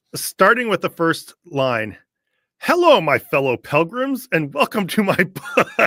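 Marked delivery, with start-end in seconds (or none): 2.6-5.8 as obnoxious as possible, pitched-up voice. Reading the first line of a book aloud, mock-obnoxious reading. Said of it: "obnoxious way possible".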